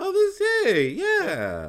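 very high, swooping, easygoing friendly tone. Doing an impression of a friend called Jason: his friendly tone. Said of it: "this kind of tone to your voice".

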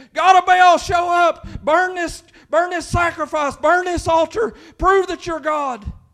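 screaming, hollering, high and loud. Retelling the Bible story of Elijah and 400 worshipers, retelling worshipers' screaming. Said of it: "they're hollering, they're screaming".

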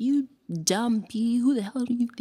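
high, furious, acted angry rant cut off mid-word. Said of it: "going off".

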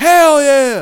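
very loud, high, excited cheering holler. Recounting how a man sitting beside the speaker reacted to a movie's opening, retelling a yell. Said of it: "he yells out".

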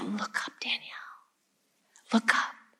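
very quiet, soft, breathy whisper. Retelling what her husband whispered during the ceremony: imitating a whisper. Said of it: "my husband whispering to me".

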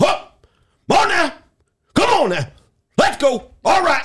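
rowdy, noisy hype, very high pitched. Telling how a guy across the gym shouts every day, imitating a noisy gym guy. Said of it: "he's making all kind of fucking noise".

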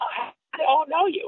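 put-on whispered, hushed, understated little English accent. Retelling a man who said he didn't know him, speaking in little English accent. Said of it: "with his little English accent".

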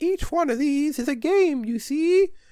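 high-pitched fairy-tale witch voice. Retelling what the witch said while setting down crystal balls, in a witch voice. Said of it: "That is a spot-on witch impression".

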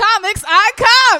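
shouting with excitement. Announcing the name of a favorite segment: excited yell. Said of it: "I just had to yell it that time".

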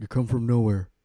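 put-on brooding villain voice. Imitating a movie villain telling Rey her parents were nobody: Kylo Ren impression. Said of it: "that's a good impression".

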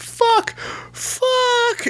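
very high-pitched put-on comedian voice. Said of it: "and he goes".

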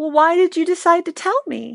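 small, high, teary voice through tears. Retelling a talk about her feelings, repeat her question in a little Jeannie voice, mock-tearful. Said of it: "with this little Jeannie voice and tears in her eyes".

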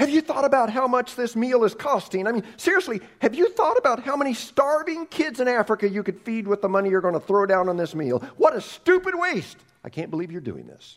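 high-pitched, furious, ranting angry yell. Speaking as their pastor, the speaker acts out yelling at their hosts: acting out angry yelling. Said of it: "And I yell".

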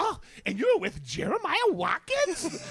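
mock very high, swooping, drawn-out, awestruck, starstruck voice. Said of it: "she said it like you were fucking [name]".

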